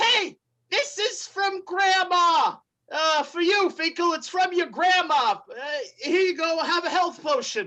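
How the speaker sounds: high, small goblin character voice. Voicing a small goblin who hands the adventurers a health potion: small goblin voice. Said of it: "in the hands of a small goblin".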